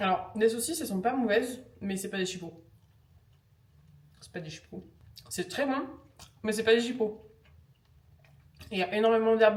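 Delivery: talking with mouth full. Tasting sausages live on camera, talking with mouth full. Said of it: "je vous parle la bouche pleine".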